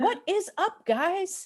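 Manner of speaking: very high-pitched, hyped-up online video host voice. A parent shows how their son opens his YouTube channel: imitating son's YouTube intro. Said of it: "That's how he does it".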